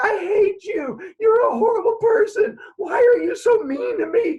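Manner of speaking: very high, loud, shrill furious screaming. Retelling flailing at someone with pool noodles, retelling screaming. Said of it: "I was screaming".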